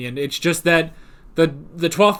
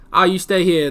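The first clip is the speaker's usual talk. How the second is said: put-on New York accent. Quoting a companion's line, trying his accent: attempted imitation of Ben, New York-sounding. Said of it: "but it came out New York".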